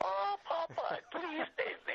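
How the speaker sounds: very high, pleading false voice. Recalling people next door repeating a cartoon line, in an Olive Oyl false voice. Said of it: "in this false voice".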